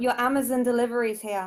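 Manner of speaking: plain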